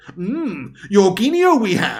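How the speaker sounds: very slow, drawn-out, odd voice with swooping pitch. Mocking a viewer's chat message by rereading it: Yoda voice. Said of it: "Are you fucking Yoda all of a sudden?".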